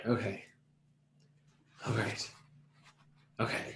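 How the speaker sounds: furious, frantic whispered self-talk. A player's character stares out the window, furiously thinking to themself. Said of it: "furiously thinking to myself".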